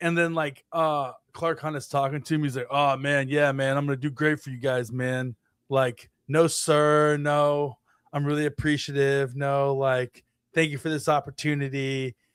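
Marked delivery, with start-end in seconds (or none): 2.7-12.1 put-on, laid-back, relaxed voice. Imitating a drafted player on the phone with the team owner: Peter Woods voice, laid back. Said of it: "it was very laid back and relaxed".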